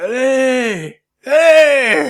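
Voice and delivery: high, loud, crying mock yell.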